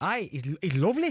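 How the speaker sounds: Geordie accent. Asked to do the accent again, the speaker repeats a Newcastle fan's remark in a Geordie accent. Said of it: "go Welsh again".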